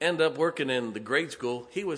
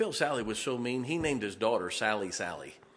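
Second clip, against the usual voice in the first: normal talking voice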